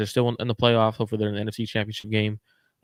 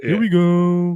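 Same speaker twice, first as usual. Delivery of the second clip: glum, mopey, hopeless voice, pitched up and loud; 8 semitones higher, 6 dB louder than usual. Recounting a text exchange with a friend, in a mock-sad Eeyore voice. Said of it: "Like I hear it like hella sad".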